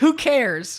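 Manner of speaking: plain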